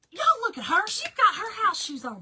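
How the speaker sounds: shrill, very high, very loud scream. Retelling what the officer yelled on a busy road; retelling a yell. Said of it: "And yelling".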